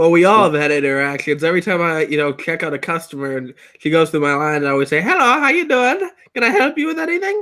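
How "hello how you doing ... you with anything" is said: put-on Indian accent, very high. A man shows how he greets a female customer at his checkout line; Indian accent.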